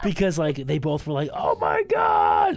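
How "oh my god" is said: very high, loud screaming shriek. The speaker retelling how two people reacted to them throwing up, retelling a scream. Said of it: "like screaming".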